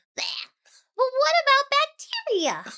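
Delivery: very high, swooping, slowly drawn-out voice. Retelling a Tarzan scene, voice acting: Tantor from Tarzan impression. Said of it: "And he goes".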